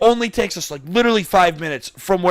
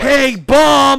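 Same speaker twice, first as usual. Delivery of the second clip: put-on high, loud shout, "bump" stretched out; 7 semitones higher, 6 dB louder than usual. Retelling a warning shouted at a friend on a scooter: imitating a warning scream. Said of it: "We were screaming it".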